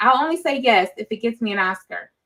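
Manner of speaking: ordinary talk, nothing marked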